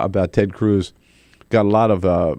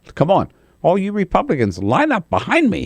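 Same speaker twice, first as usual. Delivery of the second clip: put-on very high, snotty, whiny little-kid voice; 10 semitones higher than usual. A speaker mocks a man's call for Republicans to line up, mock whiny snotty little voice. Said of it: "snotty little voice of his".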